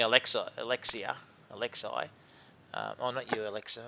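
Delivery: ordinary delivery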